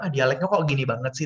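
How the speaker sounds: ordinary talk, nothing marked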